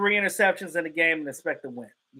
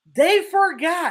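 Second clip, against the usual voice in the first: they forgot drawn out, slow and high.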